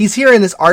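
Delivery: here stressed, pushed up and loud.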